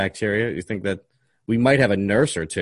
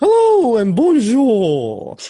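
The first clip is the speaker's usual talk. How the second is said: very high, loud, trilled, swooping delivery; 8 dB louder than usual. Making food while telling a story, doing a Julia Child impression. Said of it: "I think that's a pretty good Julia Child impression right there".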